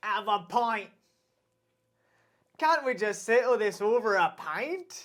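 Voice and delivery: cartoonish ogre voice. Doing a voice that the other speaker recognizes: Shrek voice. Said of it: "That's Shrek".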